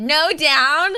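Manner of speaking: mean, high-pitched tone. Retelling what was said after being picked up: mean older cousin tone. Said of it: "Like a mean older cousin".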